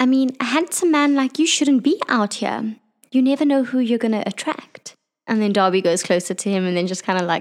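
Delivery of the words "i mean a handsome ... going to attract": prissy, prim, proper-sounding, pitched-up voice. Playing a character who questions a young elf: prim and proper voice. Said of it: "a little bit prim and proper".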